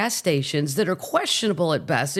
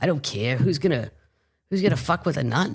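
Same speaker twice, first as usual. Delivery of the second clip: put-on New Jersey accent; 4 semitones lower than usual. Quoting a jersey nun who smoked: imitating a jersey accent. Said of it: "she had the accent and everything".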